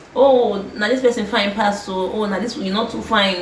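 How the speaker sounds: ordinary delivery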